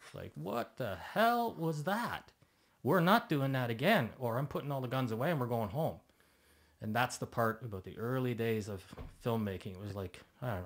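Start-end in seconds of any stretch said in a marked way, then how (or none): 0.3-6.0 loud, angry shouting and screaming. Retelling yelling at the crew after the cut: retelling own angry screaming. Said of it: "I was screaming at everybody".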